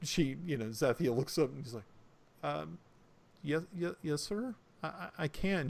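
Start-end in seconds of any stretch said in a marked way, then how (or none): 2.4-5.7 timid, meek, frightened, stammering voice. Voicing a girl answering an orc at a table: meek, frightened voice. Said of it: "She gets very meek and kind of freaked out".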